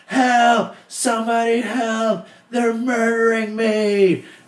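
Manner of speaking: put-on very high, shrill, drawn-out top-of-lungs scream. Hellmaster recalls scaring pledges, re-enacting screaming at the top of his lungs. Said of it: "I would scream out of the top of my lungs".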